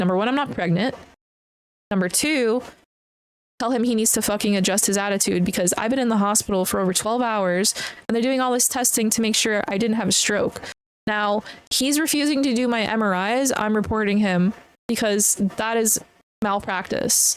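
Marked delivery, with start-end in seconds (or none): none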